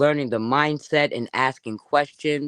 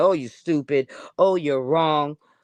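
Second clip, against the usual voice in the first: mock, belittling, insulting, imposing put-down tone. Showing how not to talk to others: imitating an insulting put-down. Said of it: "being imposing and insulting and be like".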